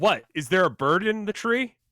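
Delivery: put-on utterly disbelieving tone, high-pitched. Retelling a man in athletic gear questioning you, mock-incredulous question. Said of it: "In the most incredulous tone".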